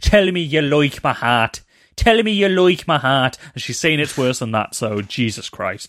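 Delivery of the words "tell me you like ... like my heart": loud, bad, laid-on Irish accent, pitched up. Imitating a film actor's famously bad Irish accent: Tom Cruise's bad Irish accent. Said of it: "This is Tom Cruise in that film".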